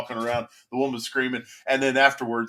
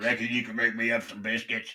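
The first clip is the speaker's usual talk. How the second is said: put-on dog voice with underbite, quieter; 4 dB quieter than usual. Imagining what the dog would sound like, the speaker voices it: dog voice with underbite. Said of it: "get that underbite".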